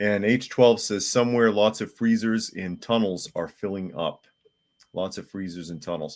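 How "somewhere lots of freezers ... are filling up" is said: ordinary talk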